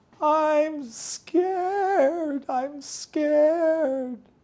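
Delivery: put-on very high, very slow tiny child squeak. Narrator reads the line of a little child beside them: tiny squeaky voice. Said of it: "a tiny voice squeaked".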